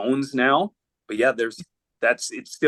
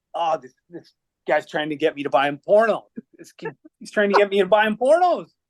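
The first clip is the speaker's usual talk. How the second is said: mock yelling, pitched high, loud and dramatic; 6 semitones higher than usual. Retelling teammates at a gas station making a scene: imitating teammates yelling. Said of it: "start yelling".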